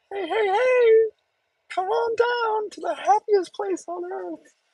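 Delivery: squeaky voice, pitched way up high. Joking that their own voice sounds off: Mickey Mouse voice. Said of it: "Why am I sound like Mickey Mouse?".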